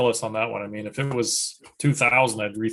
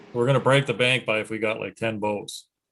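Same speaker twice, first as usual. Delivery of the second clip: ordinary delivery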